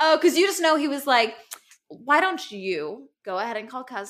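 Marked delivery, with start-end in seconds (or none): 1.9-4.1 mock spiteful voice dripping with venom. Imagining what a man in the story said: imitating a voice dripping with venom. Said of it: "his voice and just dripping with venom".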